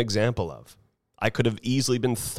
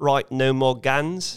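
terrible fake New Zealand accent; 3 semitones higher than usual. Quoting a national leader banning guns: terrible New Zealand accent. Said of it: "that's a terrible New Zealand accent".

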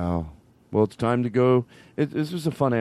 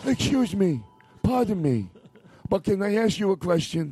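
put-on higher-pitched old man voice; 8 semitones higher than usual.

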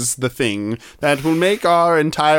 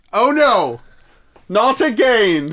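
loud, raised voice, declared aloud for all; 8 semitones higher than usual. Contrasting an under-the-breath version of the line, announcing it out loud. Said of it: "Or do you have to announce it?".

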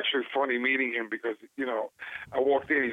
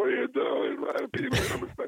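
put-on screaming, very high and rough; 12 semitones higher than usual. Retelling how crew members chased him for riding the bike: imitating people screaming. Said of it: "screaming at me".

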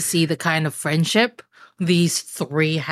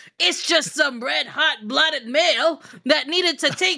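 put-on higher-pitched, reassuring old man voice. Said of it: "Grandpa's gonna be like".

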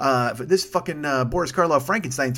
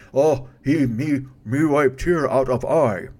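very slow monster voice, every word drawn out. Retelling something the speaker said earlier, in a Frankenstein monster voice. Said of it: "almost like a Frankenstein voice".

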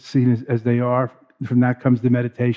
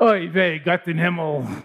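put-on grandmotherly old woman voice, higher pitch; 5 semitones higher than usual. Mid-teaching on Mahamudra, the speaker breaks into a grandmother's voice. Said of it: "That's my grandmother's voice".

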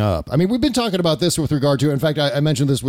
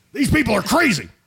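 high, far-off, ranting put-on impression. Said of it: "You're too good at that".

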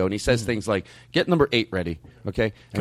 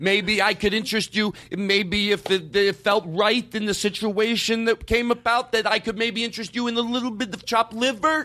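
put-on stalling comic delivery, higher; 10 semitones higher than usual. Imitating Andy Kindler stalling before the punchline: imitating Andy Kindler stalling. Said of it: "he's doing the words to stall for the second part".

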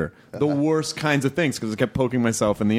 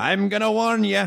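put-on rough, creaky, high old man voice; 9 semitones higher than usual. Joking about giving advice from experience: imitating an older guy. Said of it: "like an older guy going like".

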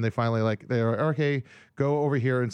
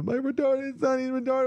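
mock sobbing, higher; 13 semitones higher than usual. Retelling a crash, quoting a lady from the other car: imitating a crying woman. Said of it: "she's crying".

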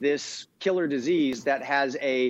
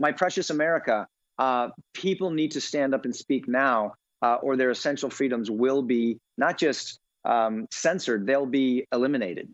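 plain

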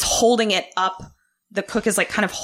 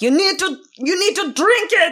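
fake German accent, very high-pitched; 10 semitones higher, 4 dB louder than usual. Retelling what people in the show said, in a put-on german accent. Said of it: "my German accent is so good".

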